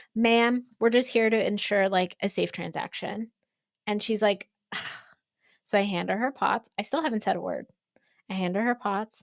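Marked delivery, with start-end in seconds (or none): none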